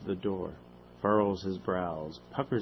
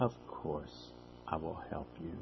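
soft, phony compassionate voice; 3 semitones lower, 8 dB quieter than usual. Dr. Turner answers someone begging him for help, in a phony compassionate voice. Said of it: "in a phony, compassionate voice, said".

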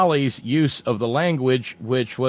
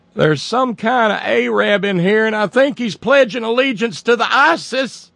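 very high, put-on Cleveland accent, done badly; 9 semitones higher, 4 dB louder than usual. Act out the sister's call to 911 in a badly done Cleveland accent. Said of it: "I don't do that Cleveland accent".

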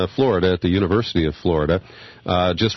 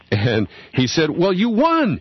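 ordinary talk

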